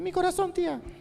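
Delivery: put-on, very high small child's voice. Recalling answering where Jesus is as a boy: put-on child's voice. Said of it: "con voz de niño".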